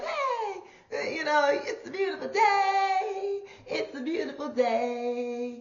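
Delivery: mock perky, high, cheerful, drawn way out. Describing being a morning person, act out a mock-perky cheerful voice. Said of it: "I'm just so perky in the morning".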